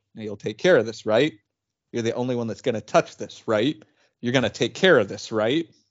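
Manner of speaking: strict, stern, insistent, pressing tone. Retelling the tech director handing over a prized toy: imitating a stern warning. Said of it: "gave me a very stern, like, handoff".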